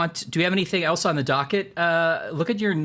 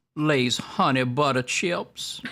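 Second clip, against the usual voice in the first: heavy, put-on New Orleans accent; 2 semitones lower than usual. Repeating a line on request for a listener: New Orleans accent. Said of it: "saying the name of his chips in a New Orleans accent".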